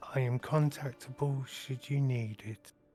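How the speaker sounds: whispered voice. Sending a quick message to the group in character: whispering to the group. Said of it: "I'll just quickly whisper to the group".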